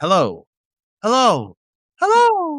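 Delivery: "hellos" stepped up to very high pitch. Explaining vocal production, demonstrating pitch with one word: stepping through three pitch levels. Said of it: "Three different big levels of pitch".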